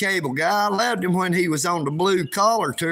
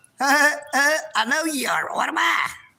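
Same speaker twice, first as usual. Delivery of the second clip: put-on nasal man-child voice, higher pitch; 8 semitones higher than usual. Showing the chat another voice he could do: Pee Wee Herman voice. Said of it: "a pretty good Pee Wee Herman".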